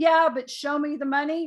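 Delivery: ordinary delivery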